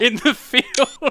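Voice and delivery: laughing and giggling through the words.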